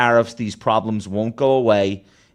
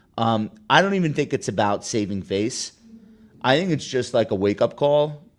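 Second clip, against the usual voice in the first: normal talking voice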